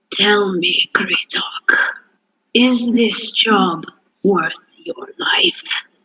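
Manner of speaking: rough, low-pitched, gravelly whisper. Voicing a necromancer character questioning kritok, in a low, gravelly whisper. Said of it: "in kind of his low, gravelly whisper".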